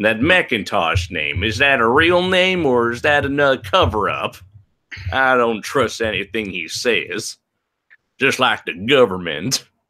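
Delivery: put-on Western Southern accent. Doubting whether a YouTuber's name is real: Western Southern accent. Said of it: "suddenly talking in a Western Southern accent".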